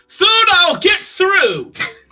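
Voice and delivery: high, loud, strained shout.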